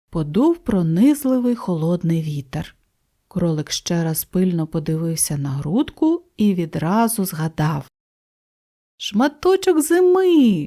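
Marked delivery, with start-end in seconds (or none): 9.0-10.7 very high, delighted, joyful cry, stretched out. A rabbit stares at a hard lump and suddenly remembers, joyful exclamation. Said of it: "радісно вигукнув він".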